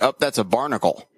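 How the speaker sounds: ordinary talk, nothing marked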